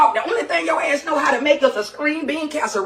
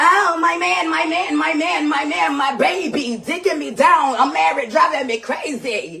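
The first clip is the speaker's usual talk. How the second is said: mocking, sneering put-on voice. Mocking how the addressed person talked about their man: mocking imitation of her. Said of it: "you painted a real good picture in front of everybody".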